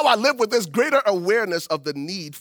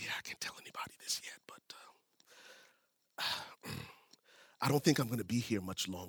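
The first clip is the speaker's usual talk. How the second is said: very quiet, breathy whisper; 10 semitones lower, 18 dB quieter than usual. Retelling what a guy at work said: imitating someone whispering. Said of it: "he's whispering to me".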